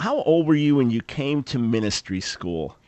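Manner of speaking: ordinary delivery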